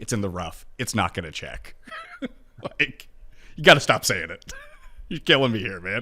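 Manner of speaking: very calm, soft, patient voice. Retelling what he finally told the man on the course, retelling a very calm voice. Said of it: "just a very calm voice".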